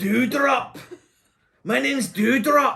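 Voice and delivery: put-on drawn-out, slow, shrill, loud, high Scottish accent. Mocking a wrestler's ring name: Scottish accent as Doudrop. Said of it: "especially in a Scottish accent".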